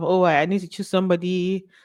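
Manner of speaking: ordinary delivery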